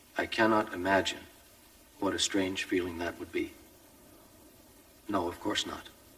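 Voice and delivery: plain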